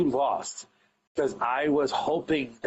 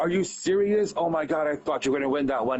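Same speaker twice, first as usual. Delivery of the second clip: acted upset, disappointed, voice cracking. The booker acts out reacting to you losing the match: acting out an upset, cracking voice. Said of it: "you hear it in my voice that it's cracking".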